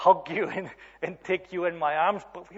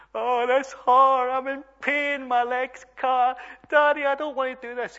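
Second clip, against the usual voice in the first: put-on play-acted, high, loud, hurt child sobbing voice; 6 semitones higher, 5 dB louder than usual. Retelling teaching his daughter to ride; she falls and cuts her leg: imitating her crying. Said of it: "and she's crying. She's going".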